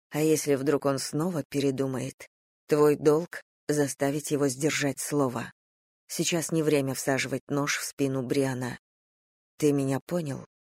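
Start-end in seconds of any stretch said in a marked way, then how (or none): none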